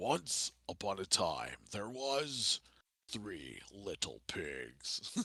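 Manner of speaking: deep, soft, slow epic narrator voice. Reading a children's story opening for a joke show idea: Optimus Prime epic voice. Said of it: "read out children's stories with that epic voice".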